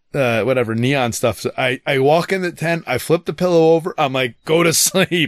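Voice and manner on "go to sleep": high, exasperated, fed-up, frustrated voice. Retelling telling a child to go to sleep after flipping the pillow, retelling frustrated words. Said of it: "I was so frustrated at that point".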